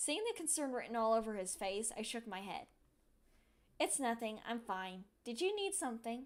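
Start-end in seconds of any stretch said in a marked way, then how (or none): none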